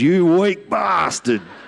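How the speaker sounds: sudden, high-pitched yelled outburst, acted out. Retelling laughing at a man laid on his back by a four-wheeler, retelling his own yell. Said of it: "all I yelled out was".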